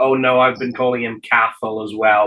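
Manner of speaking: ordinary talk, nothing marked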